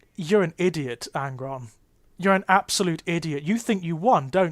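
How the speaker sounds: ordinary talk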